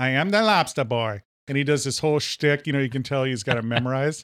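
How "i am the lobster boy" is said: put-on voice with thick East Coast accent. Retelling a sideshow performer's opening line: imitating Larry Bud Melman voice. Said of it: "he sounds like Larry Bud Melman from David Letterman".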